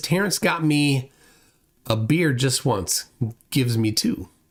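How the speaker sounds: plain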